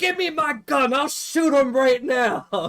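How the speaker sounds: put-on high, loud, slow, drawn-out old man outburst. Retelling a clip of an old veteran walking past protesters: imitating an old veteran. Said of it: "the old veteran guy who's, like, fucking really fucking old looking".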